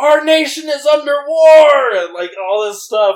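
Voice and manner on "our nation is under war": very loud, very high, shrill screaming. Retelling a stranger seen while waiting for tacos, retelling a man's screaming.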